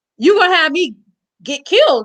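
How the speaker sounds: mock furious yell, high-pitched. Retelling how a friend yelled after the scene: imitating someone yelling. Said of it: "he turned around and he yelled at me".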